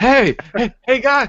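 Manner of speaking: loud, high-pitched shouting out.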